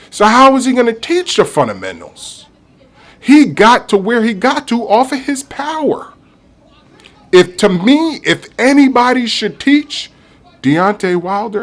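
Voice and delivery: fired-up ranting. Speaking into a new mic, yelling. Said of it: "I'm sorry for yelling into the mic".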